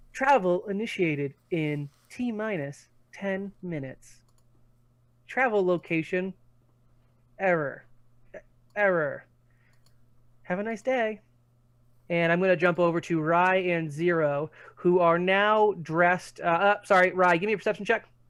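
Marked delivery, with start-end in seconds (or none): 0.1-11.1 soft, calm, soothing automated announcement voice. Voicing a station announcement heard even in the basement: calming female voice. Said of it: "it's that calming female voice".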